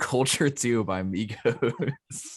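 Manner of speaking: talking through laughter. Announcing an album choice to the others, laughing while talking. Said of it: "you laughing as you say it".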